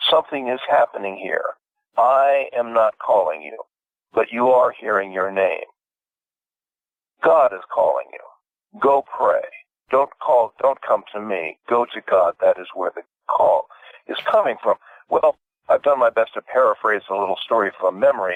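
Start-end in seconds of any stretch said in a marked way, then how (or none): 0.1-14.8 acted gentle, kindly voice. Retelling a story, the speaker voices an old rabbi speaking to a boy, in a kindly voice. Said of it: "he says in a very kindly voice".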